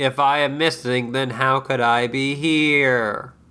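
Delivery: mock flat monotone voice. Retelling what a man said to cable people questioning him, imitating a monotone voice. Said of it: "He's all monotone".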